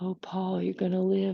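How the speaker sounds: soft, hushed, heavenly angel voice. Retelling a sketch, speaking into a bandaged man's ear: angel voice. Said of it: "I have a real good angel voice".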